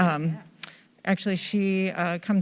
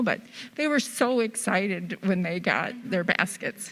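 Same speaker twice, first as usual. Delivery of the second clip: heartfelt, emotional, visibly moved voice. Answering what the charity means, recalling sisters as single moms: emotional. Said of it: "I don't know why I'm so emotional".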